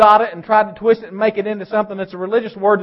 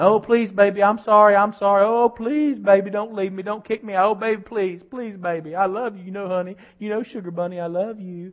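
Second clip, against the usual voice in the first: put-on begging, pleading, sweet-talking delivery; 6 dB quieter than usual. Imitating a man caught cheating who begs his wife: imitating a sweet-talking plea. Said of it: "And sweet talker".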